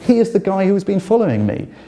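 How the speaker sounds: high, full-voice shouting at the top of the lungs. Recounting a moment in the Athens police station, retelling a shout at full voice. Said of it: "shouting at the top of my voice".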